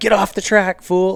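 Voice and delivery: high, furious, angry yell. Describing a guy riding in your line, retelling a scream.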